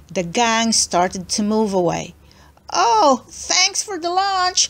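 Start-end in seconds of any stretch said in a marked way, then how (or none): 2.8-4.7 very high, taunting, mocking shouted call. Sharon calls back to Jenny as the gang moves away, shouting. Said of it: "shouted Sharon".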